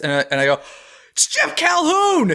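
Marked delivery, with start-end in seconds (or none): 1.1-2.3 put-on very high, thrilled, excited shriek. Retelling spotting a director passing the line: retelling a scream. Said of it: "You are screaming".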